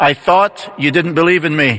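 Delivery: normal talking voice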